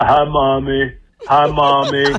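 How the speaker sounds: slow, deep, dragging put-on voice. Recalling a favorite clip of a guy saying hi: imitating a deep voice. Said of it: "The guy with the deep voice".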